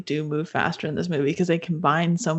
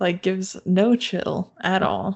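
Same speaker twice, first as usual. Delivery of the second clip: ordinary talk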